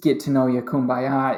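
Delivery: plain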